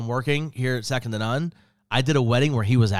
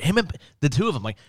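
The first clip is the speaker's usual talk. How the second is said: plain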